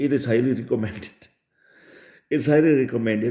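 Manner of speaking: reading aloud through laughter. Reading out a recommended step from a list, laughing while reading. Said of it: "I cannot read it without laughing".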